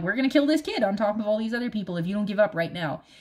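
ordinary talk

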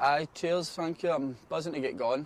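put-on friendly, natural Scottish accent. Answering an interview question after joining the club: scottish accent. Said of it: "I love Scottish accents".

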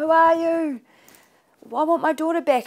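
put-on frantic, hysterical, very high and loud voice. Speaker recalls her mum grabbing her and crying, retelling mum's hysterics. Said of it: "she'd be like in hysterics".

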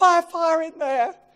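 full-out screaming, high and very loud. Retelling a house fire, the speaker reenacts shouting to the fire crew: retelling a scream. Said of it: "I'm screaming".

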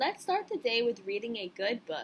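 plain

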